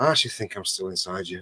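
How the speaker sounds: deflated, let-down, really disappointed tone. Retelling what a mate says in the morning: imitating a disappointed voice. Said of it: "he has this really disappointed sound in his voice".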